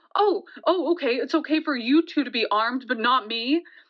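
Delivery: ordinary talk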